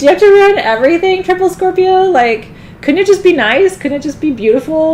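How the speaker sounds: high, loud, exasperated, pleading whine.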